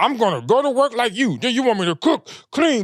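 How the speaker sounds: mocking imitation of a complaining woman's voice. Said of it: "you sound like the rest of these unwedded women".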